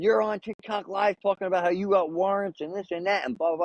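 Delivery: toned-down, mild, accusing cop-style hollering. Retelling cops swarming with guns drawn: imitating cops screaming.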